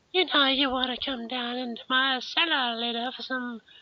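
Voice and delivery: put-on very high-pitched, creepy, lecherous old-man voice. Asked to show an impression, doing the Family Guy old creep voice.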